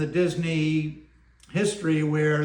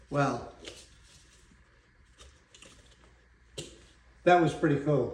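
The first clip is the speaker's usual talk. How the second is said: getting choked up, voice thick with emotion; 2 semitones lower, 4 dB quieter than usual. Recalling being made an honorary Imagineer: getting choked up. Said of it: "getting choked up, forgive me".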